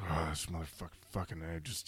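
low, very quiet, barely audible grumbling mutter. Retelling how a man turned to the camera, imitating his grumbling. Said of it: "just grumbles to the camera".

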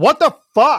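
shrill, full-volume, high-pitched yell. Retelling own reaction in the middle of a sex scene: retelling own yell. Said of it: "I know I yelled out".

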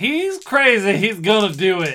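loud, drawn-out yell at full volume. Voicing a character warning the pursuers: yelling as loud as possible. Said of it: "I just yell as loud as I can".

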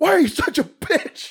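put-on very high, drawn-out screamed outburst. Retelling a movie scene where a character argues with himself: imitating a character screaming. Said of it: "he starts screaming".

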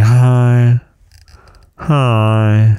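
"hi" drawn out and sagging away, sad-trombone deflating. Retelling how his wife greets him in the morning, imitating a deflated sad-trombone hi. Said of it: "a deflating Ziploc bag combined with a sad trombone".

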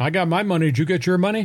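said jokingly. A podcast host retells their own remark, retelling a joking remark. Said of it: "I said jokingly".

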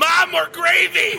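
drawn-out high-pitched yelling.

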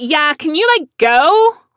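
very high, put-on girly voice, full of attitude.

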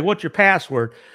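normal talking voice

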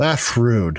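put-on, mock-drunk man's voice. Acting out a scene where a drunk guy stumbles up and objects, imitating a drunk man. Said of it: "he kind of stumbles up to you and says".

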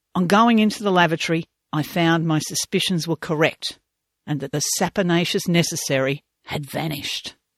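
plain

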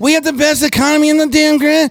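very high, complaining, whiny drone. Mocking a governor's speaking style, imitating DeSantis's whiny delivery. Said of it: "he always says like this".

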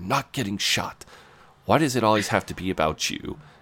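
voice kept down. Retelling Jeremy's reply to Mark as a woman walks in: Jeremy's lowered voice. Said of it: "Jeremy lowers his voice".

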